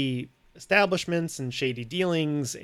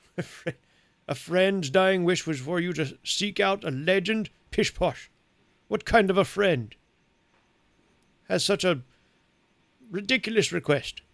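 put-on very old man voice, higher; 4 semitones higher than usual. Voicing an eighty-seven-year-old who questions a young man: eighty-seven-year-old man voice. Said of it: "I'm eighty-seven years old, young man".

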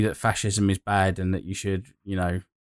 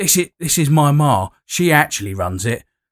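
put-on gangster voice, higher; 7 semitones higher, 8 dB louder than usual. Describing how the hammed-up villains in it come across: hammy East End gangster voice. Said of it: "They're all a little bit like".

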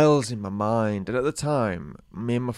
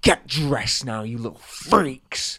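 slow, cold, harsh scolding. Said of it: "he's scolding us like mad".

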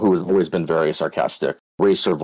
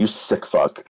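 mock stern, scolding, reprimanding voice; 2 semitones higher than usual. Recounting what he said after catching the speaker, in a mock-stern voice. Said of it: "just said in a stern voice".

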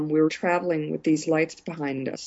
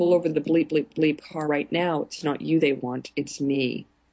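ordinary talk, nothing marked

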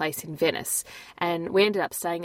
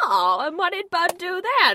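very high, loud, animated, swooping character voice; 13 semitones higher, 6 dB louder than usual. Comparing a car seller to a film character: imitating the TV remote guy from Pleasantville. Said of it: "he sounded like the T V remote guy from Pleasantville".

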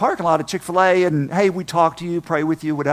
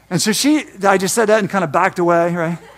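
ordinary delivery

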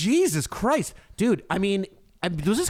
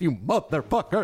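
broadcaster voice, lower; 3 semitones lower than usual. Watching a video, repeating a woman's line: announcer voice. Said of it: "broadcasting voice".

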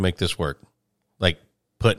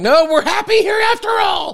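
tiny, very high-pitched little put-on voice; 4 dB louder than usual. Telling a story about a contact lens stuck to the eye, voicing the contact lens. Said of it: "It's like".

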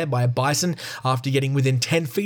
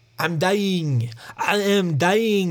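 bad French accent, high pitched and very slow; 5 semitones higher than usual. Narrating a true story, voicing the injured Frenchman in a put-on French accent. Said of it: "That's my French accent".

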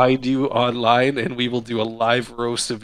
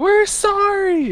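put-on very high, hollered yell; 4 dB louder than usual. Retelling how people kept yelling after someone passed away, retelling a yell. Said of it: "just kept yelling".

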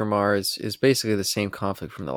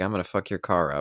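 ordinary talk, nothing marked

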